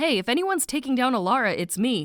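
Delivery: normal talking voice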